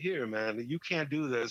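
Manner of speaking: nonchalant, casual, offhand taunting tone. Retelling how someone goaded another into smoking: imitating a nonchalant taunt. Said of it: "being nonchalant about it".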